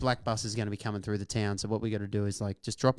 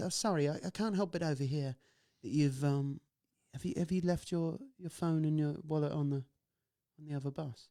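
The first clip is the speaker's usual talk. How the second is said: put-on high, plummy, posh English girl's voice; 6 semitones higher, 4 dB quieter than usual. Speaker retelling what a british girl on the bus said: posh british accent. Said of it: "good accent, by the way".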